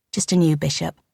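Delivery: plain reading voice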